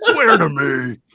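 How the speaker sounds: put-on gravelly superhero voice. Joking with the others, doing a Batman voice. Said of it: "I'm doing my Batman voice".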